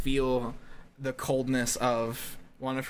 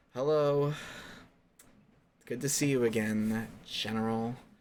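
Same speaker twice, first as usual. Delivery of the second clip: very sarcastic, slow, heavy delivery. A character greeting the General again, sarcastic. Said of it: "she's being very sarcastic about it".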